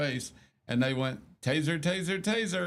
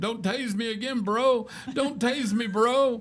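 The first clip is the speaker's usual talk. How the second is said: mock full-throated, high, drawn-out screaming; 7 semitones higher, 3 dB louder than usual. Retelling how a man who got tased kept pleading: imitating someone screaming. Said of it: "he just kept screaming".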